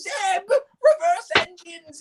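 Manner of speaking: very high, slow shout, pitch rising. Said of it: "his voice starts to go higher".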